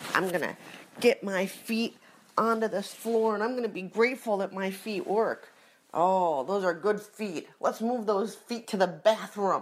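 loud, pumped-up, gung-ho, self-motivating chatter. Doing morning self-talk while getting out of bed, loud self-talk. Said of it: "I thought we used our inside voices".

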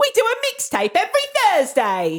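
very high, light, sing-song Cockney lilt. Teasing the other speaker by repeating their words: imitating a cockney accent. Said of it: "you went a bit cockney then".

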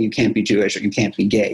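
ordinary talk, nothing marked

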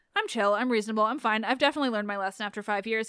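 ordinary talk

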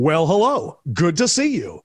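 exaggerated, dialed-up, sing-song voice.

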